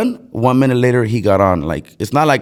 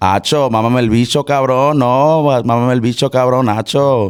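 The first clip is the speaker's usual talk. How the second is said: higher, quick, street Puerto Rican Spanish accent. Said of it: "Puerto Rican".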